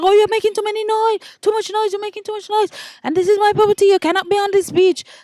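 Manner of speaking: put-on, very high-pitched, upset, complaining rant. Retelling a woman ordering kids off the beach: imitating an upset woman. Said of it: "she was, like, all upset".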